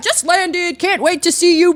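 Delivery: put-on booming speaker voice. Retelling what a man said over the speakers on arrival, imitating a booming voice. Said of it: "It's like a booming voice".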